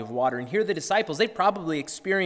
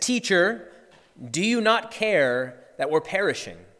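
mock edgy, accusatory, accusing tone; 2 semitones higher than usual. Retelling the disciples waking Jesus, imitating an accusing edge in their voices. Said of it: "a bit of an edge to their voices".

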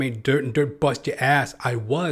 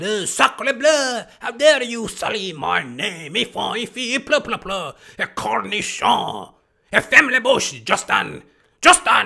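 put-on French accent, much higher, louder, slower; 9 semitones higher, 4 dB louder than usual. Ranting speaker imagines Pierre Trudeau back from the dead, calling his son; Pierre Trudeau impression. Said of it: "Just come back from the dead".

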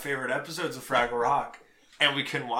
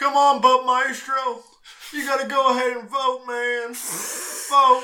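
booming, loud, high voice, drawn out; 11 semitones higher, 9 dB louder than usual. Doing another voice for the co-host: Bill Clinton impression. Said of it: "That's Bill Clinton".

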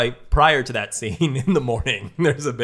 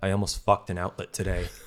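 put-on flat, sad monotone, quieter; 4 semitones lower, 6 dB quieter than usual. Retelling what Ryan said walking in with his date, imitating Ryan's sad monotone. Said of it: "in the most sad that's- monotone voice".

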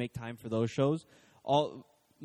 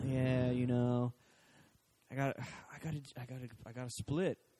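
put-on laid-back surfer voice, quieter; 5 dB quieter than usual. Retelling a TV scene, imitating Jesus as a laid-back surfer dude. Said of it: "this laid-back surfer dude".

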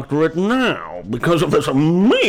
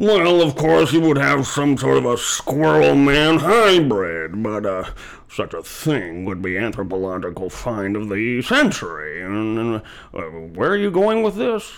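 comic put-on fat-sounding character voice; 2 semitones lower than usual. Speaker performs a character that a co-performer later praises: fat character voice. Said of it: "that's an amazing fat voice".

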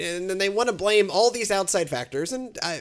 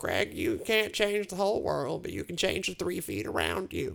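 badly done put-on grandmother voice; 6 dB quieter than usual. Speaker quoting what Greg's grandmother taught him, bad impression of his grandmother. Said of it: "My my impression of his grandmother".

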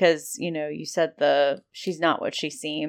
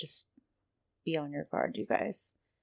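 low hush, much quieter; 8 dB quieter than usual. A game master voices a woman's quick aside to the players, in a low hush. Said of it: "low hush".

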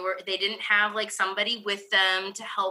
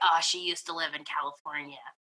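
low, muttered mumble under the breath; 4 semitones lower, 4 dB quieter than usual. Imagining what a bystander said about the other speaker: imitating someone mumbling under their breath. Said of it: "mumbling under their breath".

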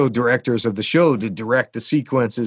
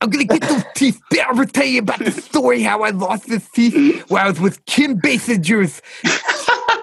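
put-on lisping old voice, pitched higher; 12 semitones higher than usual. Retelling a story the person told, doing a Ralph Bakshi impression. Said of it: "I'm doing an impression of Ralph Bakshi".

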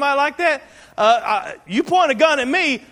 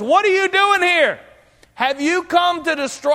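mock loud shriek, much higher pitch; 5 semitones higher than usual. Retelling how someone shrieked out during the preaching, retelling a loud shriek. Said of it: "He shrieked with a loud voice".

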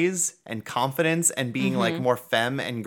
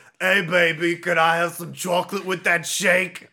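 mock New York construction worker voice, higher pitch; 5 semitones higher than usual. Describing catcalling construction workers from a story: imitating a catcalling new york construction worker. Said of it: "the stereotypical, like, New York construction worker".

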